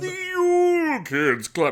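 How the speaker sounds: loud, very high sing-song, swooping, "Yule" stretched out. Opening the show, a co-host says the show's name in a Santa voice. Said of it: "You gotta say it like that".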